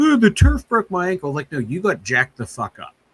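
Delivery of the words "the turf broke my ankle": whiny, high-pitched and loud complaining tone. Mocking a player's complaint about the turf: whiny Josh Gordon impression. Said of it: "you sound like a whiny little bitch".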